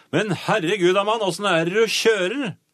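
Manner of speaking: acted, angry, high, roaring, bellowing yell. Quoting a cyclist who hit the speaker's car roof: retelling a roar. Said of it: "så brølte han til meg".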